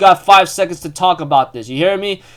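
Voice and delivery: ordinary talk, nothing marked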